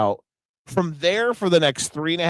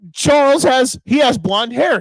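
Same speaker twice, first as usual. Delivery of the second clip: yelling, higher-pitched and louder; 10 semitones higher, 5 dB louder than usual. Retelling what was yelled to the others during the match: imitating own past yelling. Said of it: "and I even yelled to you guys".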